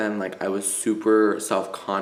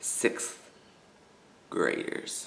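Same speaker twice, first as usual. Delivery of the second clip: lower, quieter put-on mutter under the breath; 6 semitones lower, 9 dB quieter than usual. Retelling what a man muttered in class, retelling a mutter under breath. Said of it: "He says under his breath".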